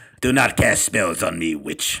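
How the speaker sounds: very low, deep fantasy character voice. Talking in a Dungeons and Dragons character's voice: D&D character's voice. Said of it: "I will go into my D and D character's voice".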